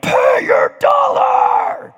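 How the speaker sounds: thundering roar, very high, very loud and shrill. Retelling leaning over a kid who owes a dollar, thundering at him. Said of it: "thundering like".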